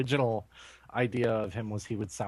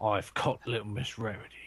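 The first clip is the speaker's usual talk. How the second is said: put-on British accent. Acting out an imagined Imperial Agent line: British accent. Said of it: "A British accent".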